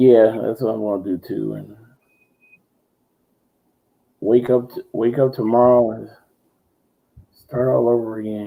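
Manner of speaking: tired, weary voice. Saying they'll watch tv and go to bed, sounding tired. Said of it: "You sound tired".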